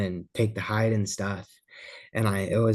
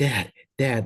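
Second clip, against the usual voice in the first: put-on heavy breathing, shaking, panting. Retelling calling to Dad as a buck comes in: acting out heavy breathing. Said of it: "breathing heavy".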